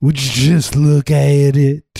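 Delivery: loud, high put-on Southern American accent. Joking about British people picking up American accents, in a put-on Southern accent. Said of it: "Where did that accent come from?".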